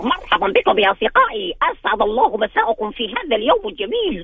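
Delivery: high cartoon voice. Asked to close the show in SpongeBob's voice, greeting his friends: SpongeBob voice. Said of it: "بصوت سبونج باب".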